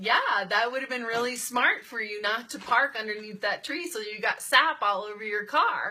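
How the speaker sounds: cutting tone, dripping with sarcasm. Giving an example of a cutting remark about parking under a tree: sarcastic. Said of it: "those are all sarcastic things".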